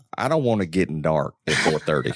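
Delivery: put-on country Georgia accent. Speaking to the others, the speaker slips into a country Georgia accent. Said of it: "let me say it like my country boy Georgia self".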